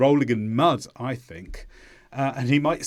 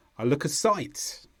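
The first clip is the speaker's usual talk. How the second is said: sight stressed, look kept light; 4 dB quieter than usual. English idiom lesson on where the stressed sounds are: stress on sight. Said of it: "So the stress here is on sight".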